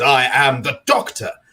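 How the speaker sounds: very slow, weighty, high, commanding delivery. Describing how a performer on the show delivers a line, imitating Paul's commanding voice. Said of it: "your voice is quite sort of commanding".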